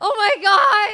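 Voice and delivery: very high, loud yelled outburst. Reacting to a question about a necklace: yelling. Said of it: "I just yelled".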